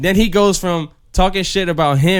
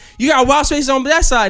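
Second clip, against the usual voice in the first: put-on man's voice, high, heated, angry rant; 10 semitones higher than usual. Retelling a man on the train answering an old lady: imitating a man going off. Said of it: "he started blacking".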